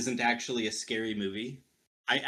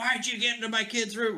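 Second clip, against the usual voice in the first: very high-pitched yelling; 11 semitones higher than usual. Retelling a movie scene where a mother yells: imitating someone yelling. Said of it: "yelling at him".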